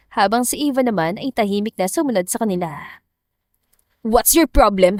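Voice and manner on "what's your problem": annoyed, irritated snapping snarl. Reading a story aloud, a man snaps after dragging her outside: annoyed snapping. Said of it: "Inis itong singhal".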